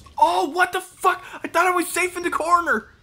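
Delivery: high, loud scream of surprise.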